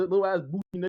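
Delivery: ordinary talk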